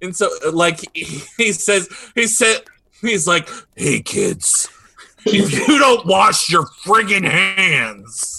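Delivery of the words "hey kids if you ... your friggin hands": menacing put-on cartoon villain voice, higher and louder. Retelling what a cartoon character says to kids: threatening covid Kyle voice. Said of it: "threatens the kids".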